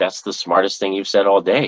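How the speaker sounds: ordinary delivery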